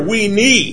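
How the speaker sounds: stress on need. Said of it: "tonight I'm emphasizing the word need".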